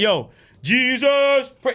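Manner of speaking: mocking, careless delivery.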